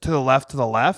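plain

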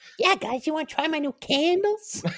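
weird, very high-pitched voice. Suggesting a voice for Nurgle, the speaker tries a high-pitched Nurgle voice. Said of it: "Maybe not that high-pitched".

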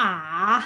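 ah with Mandarin third tone, dipping then rising. Explaining hard Chinese tones for foreigners, third tone on ah. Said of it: "like third tone, like ah, that one".

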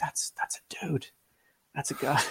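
mock whispering. Retelling a man's remark to another guy as she walked by, retelling a whisper. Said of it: "I heard him kind of like whispering it".

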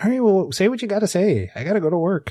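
very high-pitched, put-on Midwestern accent. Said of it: "Nice Midwestern".

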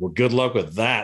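ordinary delivery

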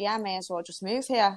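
plain

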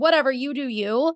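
mock condescending tone. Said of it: "very condescending".

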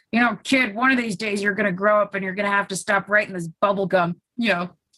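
fast, somewhat gravelly put-on man's voice. Retell what a man told you at 17, imitating his kind of gravelly voice. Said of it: "he's got this kind of gravelly voice".

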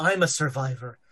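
muttering under breath. Playing Clive, answering a companion's reassurance, muttering under breath. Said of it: "saying something very quietly under his breath".

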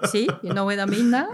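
loud, exaggerated, thick French accent. Showing a conversation partner what a thick accent really sounds like, exaggerated thick accent. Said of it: "I'll show you what the thick accent is".

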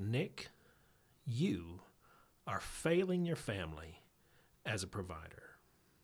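put-on very sober, grave, serious tone. Retelling what the listener once said to him: imitating a very sober tone. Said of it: "in the most sober tone you've ever spoke".

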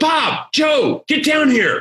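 acted, high-pitched, drawn-out hollering. Retelling a meeting, the speaker quotes the man calling colleagues over, retelling a yell down the hall. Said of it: "Like he's yelling down the hall".

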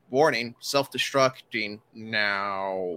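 drawn-out machine-like robot speaker voice. Voicing a damaged machine's speaker as it shuts down: droid vocalator voice. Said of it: "you hear the vocalator go".

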